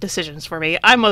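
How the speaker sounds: plain reading voice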